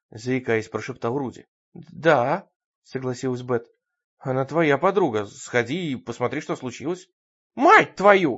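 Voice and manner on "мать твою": loud outburst shouted at full voice. A woman under a blanket, after a scream next door, turns on her companion, shouting. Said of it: "закричала Бет".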